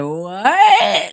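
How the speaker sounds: put-on tearful, sobbing, drawn-out, crying "what". Retelling a man's reply after a truck ran over his bike: imitating a crying "What?". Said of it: "He was crying".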